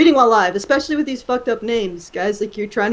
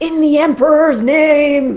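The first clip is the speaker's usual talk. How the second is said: loud, rousing, full of gusto, word drawn out; 4 semitones higher, 5 dB louder than usual. Told to give the line a little more gusto, with gusto. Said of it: "Just give it a little more gusto".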